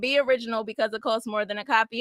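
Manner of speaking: normal talking voice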